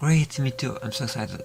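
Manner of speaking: put-on high girlish voice.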